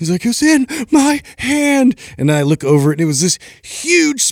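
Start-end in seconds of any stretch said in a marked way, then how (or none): 0.3-2.0 put-on panicked freak-out, much higher. Telling a story about a friend and a spider, imitating him freaking out. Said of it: "and it just and he freaked out".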